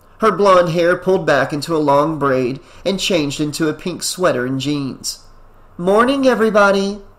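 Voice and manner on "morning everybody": forced, artificially cheerful, pitched-up delivery. Pam greets everyone as she enters the room, with forced cheerfulness. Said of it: "trying to inject some cheerfulness, albeit artificial".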